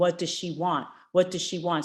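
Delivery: normal talking voice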